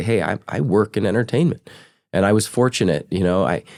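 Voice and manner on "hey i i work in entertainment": ordinary talk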